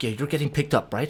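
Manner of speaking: mock near-whisper. Retelling what a bank clerk asked quietly: imitating a near-whisper. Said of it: "she's almost whispering to me".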